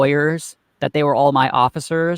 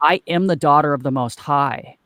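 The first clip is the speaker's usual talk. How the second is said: ordinary talk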